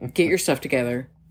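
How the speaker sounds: put-on military drill voice. Retelling how the speaker reacted to a crying daughter: military drill voice.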